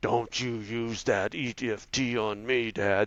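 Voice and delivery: dark, demonic voice. A father repeats what his daughter would say to him at her worst, demon voice. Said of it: "she had this demon voice that would come out and go".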